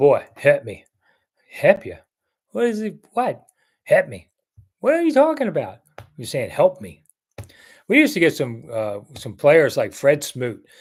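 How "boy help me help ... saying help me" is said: put-on heavy, laid-on Southern accent with swooping pitch. Recalling how the speaker's father used to talk: imitating dad's big southern accent. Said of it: "who had a big old accent. He'd go".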